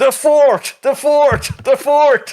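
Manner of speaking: very high, very slow, drawn-out village idiot hollering. Voicing the town idiot in a cheering crowd: town idiot shouting. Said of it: "the town idiot just like".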